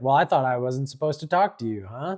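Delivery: mock cheeky character voice. Recapping a story chapter, quoting a character, retelling Tsurugi's cheeky comeback. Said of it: "he's just very cheeky with the comeback".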